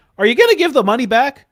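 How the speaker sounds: loud, high, hard-pressing insistent tone. Retelling a phone call, imitating CoffeeZilla pressing for the money back. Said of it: "That's how he talks".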